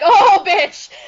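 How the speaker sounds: sassy, mock-outraged, high and loud.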